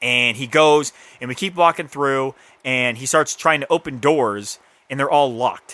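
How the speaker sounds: ordinary delivery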